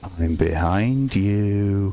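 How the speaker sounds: low, foreboding, ominous voice with drawn-out "you". Describing an expected scare moment, a voice from nowhere: ominous voice. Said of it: "this ominous voice".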